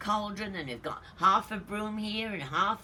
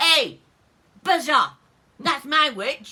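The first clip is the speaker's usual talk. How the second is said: loud, shrieking, yowling monster voice; 5 semitones higher, 11 dB louder than usual. Reading a story aloud, the creature from the ditch speaks to the dragon: yowling, shrieking voice. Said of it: "was a yowl and a shriek".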